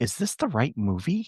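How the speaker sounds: hushed, soft half-whisper. Retelling what Ashley half-whispered during the movie: imitating Ashley half-whispering. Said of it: "Ashley whispers over to me and she's like".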